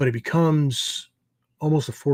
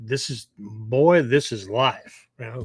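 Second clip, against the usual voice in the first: slow, put-on Southern drawl. Acting out a flat-out life lesson from somebody: put-on Southern accent. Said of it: "I don't know why I used a Southern accent".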